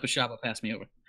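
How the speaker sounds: muttered under the breath. Asking a god in character to pass over: muttered under the breath. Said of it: "quickly under my breath".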